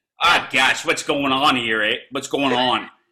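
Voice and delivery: fake rural American accent over Canadian voice. Asked by another speaker to hear the accent, doing a canadian actor faking rural american. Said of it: "Can I hear the accent?".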